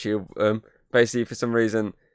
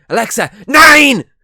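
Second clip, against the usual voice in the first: put-on shrill, high, loud, shouted thick German accent; 14 semitones higher, 15 dB louder than usual. Retelling how they shouted at Alexa from the stairs, in a thick German accent. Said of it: "in the most thickest German accent".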